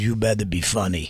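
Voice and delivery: put-on Italian accent, low and hushed. Retelling what a guy named Moosey said while a kid was on stage, Italian-accent impression of Moosey. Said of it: "was that the Italian accent?".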